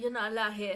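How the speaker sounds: imitated Southern accent. Imitating a man ordering people out of his house, southern accent. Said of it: "He has a southern accent".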